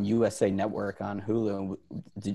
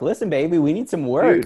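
put-on Singapore child voice, higher and louder; 8 semitones higher, 6 dB louder than usual. Acting out kids in Singapore upset at protesters: imitating kids in Singapore. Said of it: "They're like".

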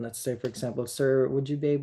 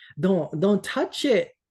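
raised voice, higher and slower; 8 semitones higher, 6 dB louder than usual. Telling about a man grabbing the raft handles, retelling a raised voice. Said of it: "raised my voice".

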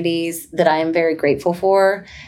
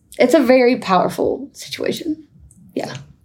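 moved, emotional voice pitched up; 7 semitones higher than usual. Mid-conversation, after apologizing, getting emotional. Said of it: "I'm gonna get emotional a second".

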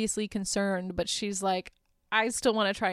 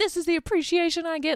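play-acted ranting, high-pitched, furious yelling; 8 semitones higher, 4 dB louder than usual. Retelling how a woman went ballistic at another woman, retelling her yelling. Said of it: "she's yelling at her".

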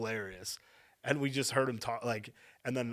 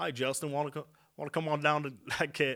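put-on Southern accent; 4 semitones higher than usual. Trying out accents, the speaker asks someone a question in a fake southern accent. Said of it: "This is Southern".

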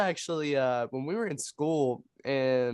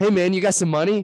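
very loud, pushy, aggressive voice, higher pitched; 5 semitones higher, 9 dB louder than usual. Retelling a tall man demanding money at a food truck: imitating an aggressive man. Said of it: "he was just so aggressive".

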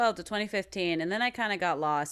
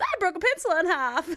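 imitated hyper, excitable voice, higher pitched; 11 semitones higher than usual. Retelling a favorite video diary moment, imitating hyper Louis. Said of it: "he's just all kinds of hyper and he goes".

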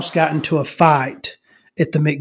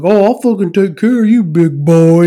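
mock, loud, menacing shouted yell; 3 semitones higher, 6 dB louder than usual. Retelling how a guy yelled at you, acting out his threatening yell. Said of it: "He's fucking yelling at me".

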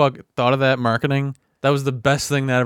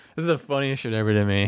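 ordinary talk, nothing marked

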